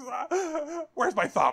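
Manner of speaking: screamed, very high and very slow, drawn out. Retelling a movie scene where a character's thumb is shot off: imitating someone screaming. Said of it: "he just screams, and he goes".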